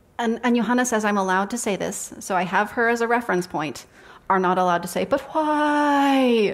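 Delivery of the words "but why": whiny, pitched-up, why stretched long. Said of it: "the whiny tone of voice".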